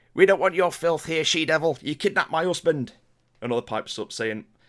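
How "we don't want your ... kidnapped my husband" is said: loud, shrill, screeching woman's voice. Game master voices a woman in a crowd outside the bar, shrill feminine screech. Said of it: "a shrill feminine voice screech out".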